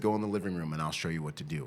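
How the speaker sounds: ordinary talk, nothing marked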